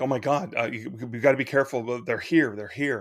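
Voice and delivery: put-on panicked voice. Retelling a parent closing blinds in alarm: imitating mom panicking.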